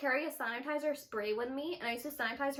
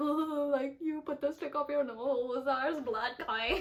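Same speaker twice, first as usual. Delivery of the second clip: put-on voice, laughing while speaking. Retelling what Ruben said about the nosebleed: imitating Ruben laughing while talking. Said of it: "Ruben's literally, like, laughing. He's like".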